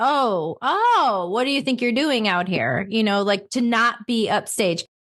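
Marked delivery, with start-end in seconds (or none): 0.0-2.9 put-on, mildly snide, a little snotty chef voice. Describing how chefs treated the beverage team back then, mock-snarky chef. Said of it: "the chef being like a little bit snarky".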